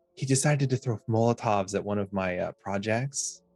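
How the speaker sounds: voice dropped a little, half-hushed. A storyteller voices a woman character, slightly lowered voice. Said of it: "kind of lowers her voice".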